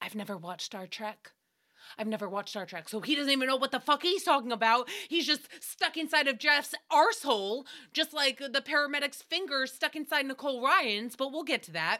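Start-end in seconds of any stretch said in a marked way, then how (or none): 0.0-2.9 tiniest breath of a whisper, under the breath. Retelling a remark made under the breath: imitating someone whispering. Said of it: "under the tiniest of breaths, into his microphone, he whispers".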